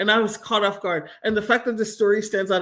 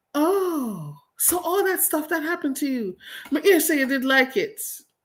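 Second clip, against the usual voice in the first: put-on high, dusty Jamaican accent, long drawn "oh"; 8 semitones higher than usual. Telling a story, the speaker quotes a man who came up to them: dusty Jamaican accent. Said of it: "in his dusty Jamaican accent".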